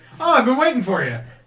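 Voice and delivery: character voice pitched way up, belted loud. Voicing a character who greets a player at a table: Garros voice. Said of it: "and it's Garros. ... He's like".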